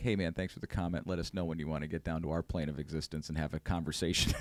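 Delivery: put-on, heavily sarcastic, dripping with sarcasm. Retelling a reply to a commenter, imitating own sarcastic reply. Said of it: "I responded with incredible sarcasm".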